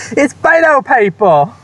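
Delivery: put-on strong Texas accent, excited and very high. Out canvassing in beto shirts, recalling a kid calling to his mom, retelling an excited shout. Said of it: "kind of say excitedly".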